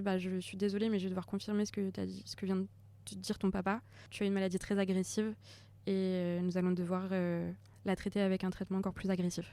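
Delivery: ordinary delivery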